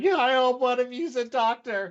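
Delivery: very high-pitched, loud cry, called out. Voicing an enemy who throws his weapon down: crying out. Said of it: "he throws his weapon down and he cries out".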